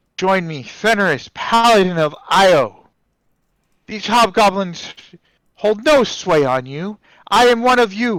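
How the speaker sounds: loudly projected rallying speech. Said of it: "I will speak in Draconic and make my voice heard".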